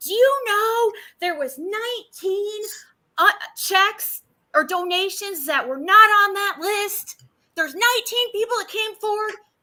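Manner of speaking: very high, shrill, angry nagging tone. Speaker retells a private caller berating them during a live show, imitating an angry rant. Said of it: "she of course started bitching at me".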